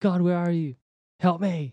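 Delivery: re-enacted scream. Retelling being pulled to the front, calling out to God: retelling own past screaming.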